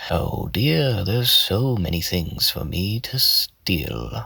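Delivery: sly cat voice, soft, squeezed and level. Demonstrating a cat character's voice element by element; soft cat voice. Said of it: "the last element is loudness, and it's really not that loud".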